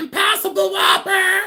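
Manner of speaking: very high, very loud, rising all-out shout. Recreating how they order over a loudspeaker: yelled loudly. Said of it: "I yell it because they go, "What would you like?" And I say it like this".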